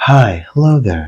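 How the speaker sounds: soft soothing ASMR voice. Explaining the voice used for videos, demonstrating a gentle ASMR voice. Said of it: "Like A S M R voice".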